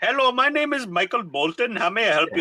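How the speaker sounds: thick, heavy put-on Indian accent. Recounting a call to outsourced server pro support, heavy Indian accent. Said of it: "customer support that usually has some heavy accent".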